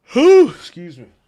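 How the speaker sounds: very high, very loud words spoken mid-yawn. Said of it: "I'm just yawning in you guys' ears".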